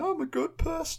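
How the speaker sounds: very high-pitched, soft whining voice. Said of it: "he's like whining".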